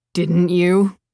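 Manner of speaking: bitter, embittered, bitter-edged delivery. Narrator reading a character's reply in a story, bitter. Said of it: "Marcus's voice was bitter".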